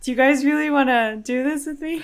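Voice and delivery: high-pitched, wobbling, trembling, quivering voice. Asked what it would cost to take forty-eight hours without screens, quivering voice. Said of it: "listen to the qu- the quiver in her voice".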